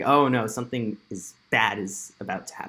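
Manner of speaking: plain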